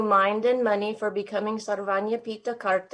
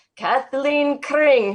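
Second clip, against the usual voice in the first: big, booming voice, pitched up; 5 semitones higher, 6 dB louder than usual. Retelling hearing a voice on the morning program call a name, big booming voice. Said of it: "I hear in this big booming voice".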